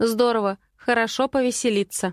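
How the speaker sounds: ordinary delivery, nothing marked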